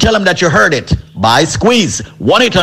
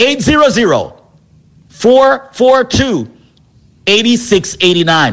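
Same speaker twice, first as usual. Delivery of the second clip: deliberate, slow, spaced-out, pitched-up delivery; 5 semitones higher than usual. Reading out the number to call: saying the number slowly. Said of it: "Let me say the number slowly".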